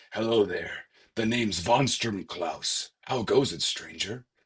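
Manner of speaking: deliberate, slow, drawn-out put-on little character voice. Reading a character's dialogue aloud, giving him a von Klaus character voice. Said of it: "we're going to give him a little voice".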